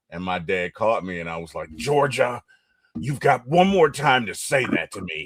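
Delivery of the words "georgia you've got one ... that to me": heated, quarrelling tone. Retelling imitating a parent arguing with mom as a child: imitating dad arguing. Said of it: "I was imitating my dad".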